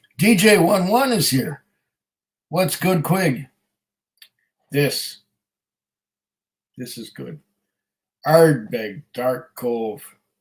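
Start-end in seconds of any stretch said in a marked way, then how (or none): 8.3-10.0 ahoy-style pirate accent. Answering what's good by naming it, in a put-on pirate accent. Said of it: "Notice I said that with a pirate accent".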